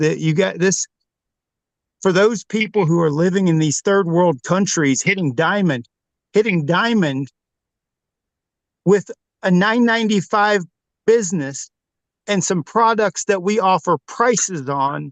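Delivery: choked-up voice, fighting back tears. Speaker addressing the team who opened a door for them, holding back tears. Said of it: "I'm trying not to cry now".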